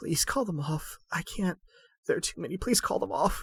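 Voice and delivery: put-on shaky, high, quavering, almost childlike pleading voice. Sitting up weakly and clutching Dosk's arm, quavering, almost childlike voice. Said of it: "says in a quavering, shaky, almost childlike voice".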